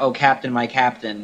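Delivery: ordinary talk, nothing marked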